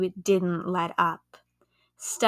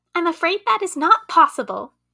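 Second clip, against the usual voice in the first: very high, very loud, squeaky voice; 10 semitones higher, 8 dB louder than usual. The rat principal answers the room, in a squeaky high voice. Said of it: "the principal squeaked in his high voice".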